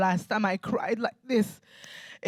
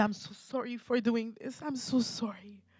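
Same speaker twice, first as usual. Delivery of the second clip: crying, tearful voice with audible sobs; 3 semitones higher, 8 dB quieter than usual. Retelling the mother's apology while she cried: imitating someone crying while apologizing. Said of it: "And she's crying as well".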